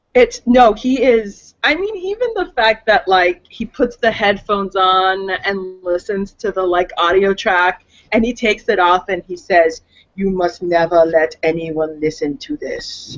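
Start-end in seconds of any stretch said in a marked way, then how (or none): 10.1-13.1 low, dead flat, deadpan delivery. Retelling what the narrator says after removing the headphones: deadpan Werner Herzog impression. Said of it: "has a deadpan delivery about him".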